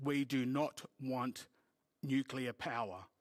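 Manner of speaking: imitated, very stern, severe voice. Retell what he said after walking in and looking at the screen, imitating a very stern voice. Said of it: "in a very stern voice".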